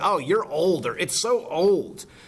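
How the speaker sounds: slow, scornful, disdainful drawl with extra attitude. Showing how a word for old can sound negative, scornful with extra stank. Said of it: "it could have a little extra stank on it".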